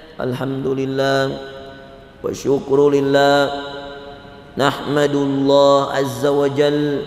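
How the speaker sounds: leisurely, drawn-out, very slow unhurried preaching-style delivery. Imitating how a preacher speaks in his sermons: very slow Syekh Amin Al-Hajj imitation. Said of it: "pelan-pelan sekali".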